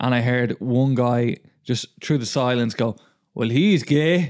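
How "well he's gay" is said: put-on Irish accent done for show. Retelling what one guy said through the silence, in a put-on Irish accent. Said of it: "Why are you putting an Irish accent on".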